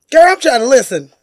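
loud, high-pitched hollering yell. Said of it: "she just yelling at her".

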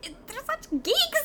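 high, slow, mock disbelieving dismay voice.

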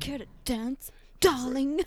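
mock aggressive delivery. Repeating a line from a clip just watched, mock aggressive delivery. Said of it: "so aggressive".

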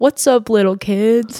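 put-on creepy show-host voice. Retelling how a ghost hunter kept greeting children in an empty schoolhouse: imitating Zach being creepy. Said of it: "he was so creepy".

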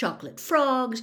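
plain

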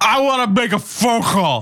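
put-on high, tipsy shouting. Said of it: "And he goes".

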